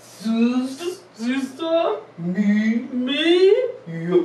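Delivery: slow, drawn-out delivery. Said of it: "Let's say it slow".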